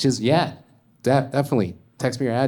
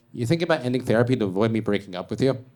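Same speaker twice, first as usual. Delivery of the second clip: usual speaking voice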